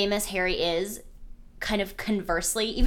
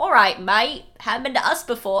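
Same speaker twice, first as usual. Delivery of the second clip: put-on Cockney accent; 2 semitones higher, 4 dB louder than usual. Discussing the Weasleys and imagining what they'd say, Weasley accent. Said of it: "I have to stop doing their accents".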